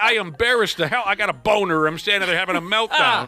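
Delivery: normal talking voice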